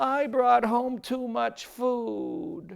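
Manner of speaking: put-on high, very slow, mournful boy voice.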